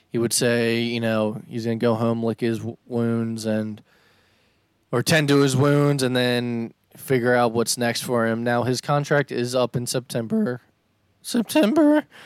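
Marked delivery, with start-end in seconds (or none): 11.2-12.0 cracked, breaking voice, very high. Reacting to when his contract is up, voice cracking. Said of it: "My voice just cracked".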